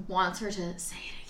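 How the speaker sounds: creepy, soft, unvoiced whisper.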